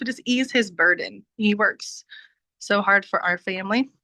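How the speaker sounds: voice catching on the edge of crying. Speaker talks about easing her husband's burden, about to cry. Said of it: "Sorry, I'm gonna cry".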